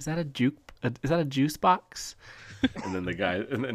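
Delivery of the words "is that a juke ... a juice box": put-on small, childlike little kid voice, pitched up. Retelling voices heard in Call of Duty voice chat, little kid voice. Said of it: "you hear like a little kid".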